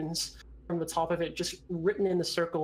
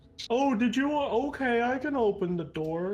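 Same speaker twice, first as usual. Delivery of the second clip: put-on dungeon ogre voice, pitched up; 6 semitones higher than usual. Voicing an ogre in a tabletop game, speaking to the players: ogre voice. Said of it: "but it's an ogre, / He says".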